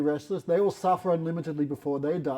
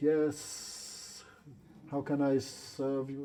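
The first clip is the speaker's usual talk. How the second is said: very slow, whispered snake voice; 7 dB quieter than usual. Retelling a story where a snake answers a call: voice of a mystic snake. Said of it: "in the voice of a snake".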